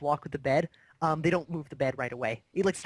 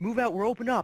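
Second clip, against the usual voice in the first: high-pitched, loudly shouted yell; 7 semitones higher than usual. Voicing a second guard trying to get in: second guard yelling. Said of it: "the second guy yells".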